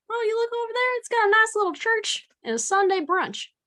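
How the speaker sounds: very high, put-on country accent. Showing what they'd say walking around with family, in a country accent. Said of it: "That's really good".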